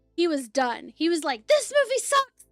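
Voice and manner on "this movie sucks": put-on angry voice, much higher pitch. Retelling a friend's reaction while watching a movie, imitating an angry friend. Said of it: "He was so pissed off".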